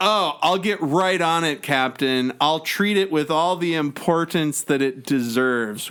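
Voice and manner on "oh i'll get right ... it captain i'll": usual speaking voice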